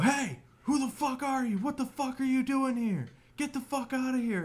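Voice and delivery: screeching, very high, shrill screaming. Retelling a stranger in the woods yelling at kids: imitating someone screaming. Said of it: "screaming at us".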